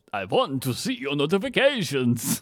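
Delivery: put-on children's TV puppet character voice. Voicing the Count from Sesame Street: Count from Sesame Street voice. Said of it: "It's the count from Sesame Street".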